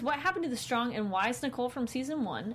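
ordinary talk, nothing marked

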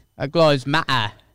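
mock British accent.

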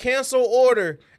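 high-pitched yell. Retelling ordering from a robot, the speaker re-enacts yelling at it. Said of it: "And then I yelled out".

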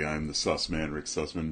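low, soft, deep radio voice. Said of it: "I got my deep voice going".

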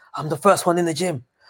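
put-on intense ranting. Retelling how a boxer rants with his eyes fixed: imitating a fixed-eyed rant. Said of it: "he goes on that rant with his eyes all, like, fixed".

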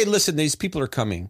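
usual speaking voice

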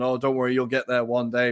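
normal talking voice

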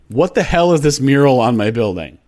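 normal talking voice

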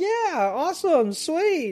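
upbeat, bright-eyed, very high, peppy vlogger voice. Imitating an overly upbeat skateboard vlogger's greeting: imitating John Hill's upbeat peppy vlogger voice. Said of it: "he was this upbeat, peppy, like, bright-eyed".

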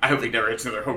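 mock-deadpan delivery. Speaker retells how another person reacted: retelling a deadpan remark. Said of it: "he was just deadpan".

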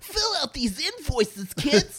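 very high, loud, swooping sing-song voice. Showing how the Pee-wee voice sounds at work: Pee-wee impression. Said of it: "really working on my Pee-wee".

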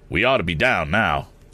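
ordinary talk

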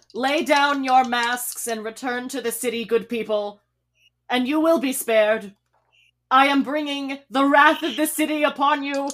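projected, loud, ringing clarion voice. In a roleplaying game, a character addresses masked opponents: loud clarion tone. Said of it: "You project your voice in a loud clarion tone".

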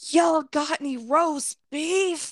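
long, high-pitched yell. Retelling a man who skipped the line and reached the register, retelling a yell. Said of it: "he starts yelling".

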